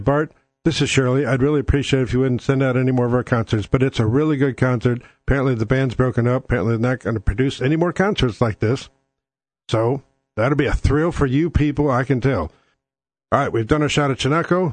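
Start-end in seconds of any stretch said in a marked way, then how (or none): none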